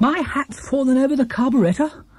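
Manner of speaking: very high-pitched, anxious, worried outburst. Paddington exclaims to the traders, anxious exclamation. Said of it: "exclaimed Paddington, anxiously".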